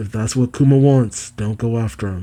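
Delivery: ordinary delivery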